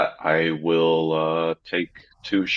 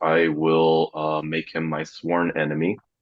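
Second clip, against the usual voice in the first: normal talking voice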